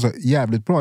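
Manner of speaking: normal talking voice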